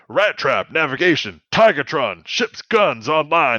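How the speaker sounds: slow, barked delivery in a Southern drawl. In a role-played story, voicing Rhinox shouting orders: barking orders, Southern accent. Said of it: "I sounded way too Southern when I was doing that".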